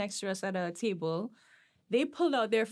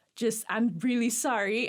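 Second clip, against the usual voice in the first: put-on begging, apologetic, pleading tone; 3 dB louder than usual. Retelling a public argument, speaking to the other people: retelling own pleading. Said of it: "the guy is also pleading with them".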